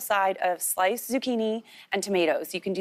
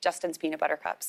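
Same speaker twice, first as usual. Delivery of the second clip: really fast, blurted, rattled-off delivery; 4 semitones lower, 5 dB quieter than usual. Answering what would make you fall off the bandwagon: said really fast. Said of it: "I said that really fast".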